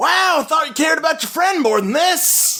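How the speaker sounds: very high-pitched, shrill yelling. Voicing a man taunting an attacker as she dives: yelling. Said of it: "he's just yelling at you like".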